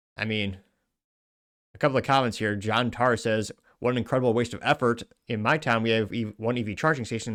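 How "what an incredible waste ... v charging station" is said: normal talking voice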